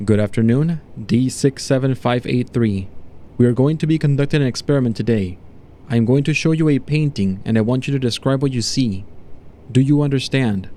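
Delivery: plain reading voice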